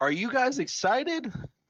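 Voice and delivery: very high, loud calling yell. In character, asking a room of people if they're excited: yelling to a room. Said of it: "You're yelling at a room full of people".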